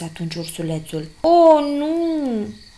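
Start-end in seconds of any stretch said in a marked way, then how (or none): 1.2-2.5 high, loud groaning moan, nu drawn out. Narrator reads a dizzy turtle answering the little bear; groaning. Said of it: "A spus gemând".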